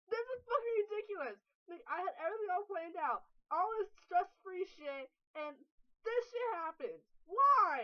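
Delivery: high, distraught, freaking-out rant, "why" stretched long. Speaker vents on a video after their plans went wrong, freaking out. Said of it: "I'm freaking the fuck out".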